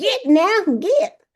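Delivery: pointed, firm, emphatic delivery with stress on get. Showing how to tell someone to go away: said with emphasis. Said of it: "you gotta say it with a little emphasis".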